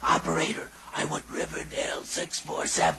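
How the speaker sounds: soft, voiceless whisper, voice nearly gone, forced out. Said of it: "Would you speak a little louder".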